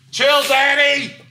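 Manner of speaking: slow, loud, high-pitched scream, drawn out.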